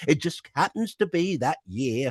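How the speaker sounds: high comic voice with a gentle northern lilt. Showing the Max character voice, inspired by John Shuttleworth: John Shuttleworth-inspired Max voice. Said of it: "I was inspired by John Shuttleworth".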